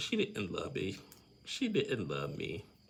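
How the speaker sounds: mock tearful crying with swooping sobbed words. Retelling a crying person's words after a breakup: imitating someone crying. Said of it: "And Gina's just crying".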